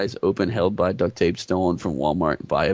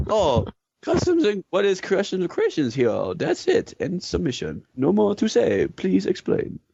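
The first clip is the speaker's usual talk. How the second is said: fake Chinese accent, higher; 11 semitones higher than usual. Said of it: "speak with a Chinese accent".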